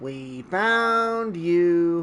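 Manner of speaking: very creepy, eerie giant-monster voice. Retelling a scene, the speaker quotes the kaiju's words before its attack in a creepy tone. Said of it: "in a very creepy tone".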